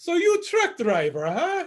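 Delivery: very high, swooping, sing-song voice. Retelling how a man looked at him and asked again: his voice going all high. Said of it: "His voice got all high".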